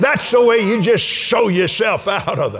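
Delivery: fervent preaching shout, loud and impassioned.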